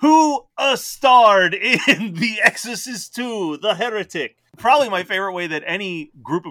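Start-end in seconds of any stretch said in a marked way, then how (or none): 0.0-4.3 slow, raised delivery sprinkled with uh. Imitating the actor's odd accent in a movie scene: Keanu Reeves accent. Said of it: "He just has a Keanu Reeves accent".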